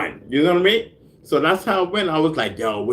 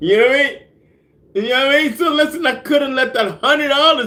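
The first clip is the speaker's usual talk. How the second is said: loud, raised, frantic yell; 13 semitones higher, 4 dB louder than usual. Talking to his listeners and bugging out, yelling. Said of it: "I'm yelling and whatnot".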